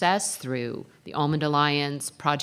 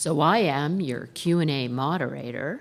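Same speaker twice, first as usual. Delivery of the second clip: slow, put-on radio announcer voice. Continuing a recorded announcement about audience questions: imitating radio announcer voice. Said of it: "if I can continue the radio voice there".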